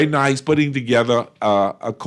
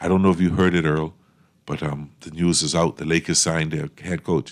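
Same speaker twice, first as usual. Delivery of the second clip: very low, soft, near-tearful voice, acted out; 9 semitones lower, 5 dB quieter than usual. Retelling how Naughty told Earl the Lakers news, imitating Naughty about to cry. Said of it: "come on like he was about to cry".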